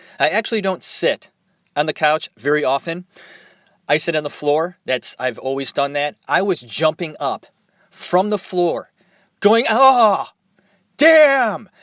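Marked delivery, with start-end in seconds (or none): 9.7-11.6 expressive, loud, high yelled outburst. Retelling a reaction while watching a film: imitating own yelling at tv. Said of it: "I was yelling at my television set".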